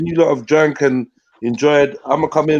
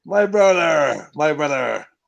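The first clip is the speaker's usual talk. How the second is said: clumsy, butchered, bad Irish accent. Speaker apologising for butchering the accent mid-line; bad irish accent. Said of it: "I'm butchering the the fucking the Irish accent right now".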